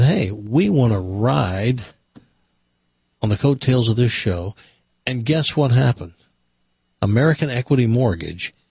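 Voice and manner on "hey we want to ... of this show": usual speaking voice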